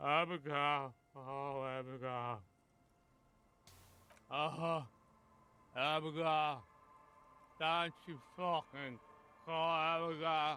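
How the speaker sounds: put-on high, slurred, rambling drunken talk. A man who is far too drunk mumbles, drunk slurring. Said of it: "this guy's a little too drunk".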